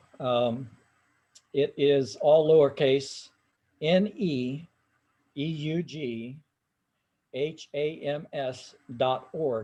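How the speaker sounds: very slow, halting, spelled out letter by letter. Giving a website address for downloading a PDF file, saying it real slow. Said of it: "I'll say it real slow".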